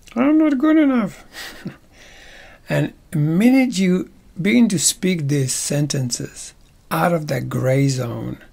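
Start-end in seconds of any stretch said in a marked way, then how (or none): 0.1-1.2 squeaked way up in very high register. Demonstrating how to voice negative self-talk aloud, with a higher pitch. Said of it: "But now say it with a higher pitch".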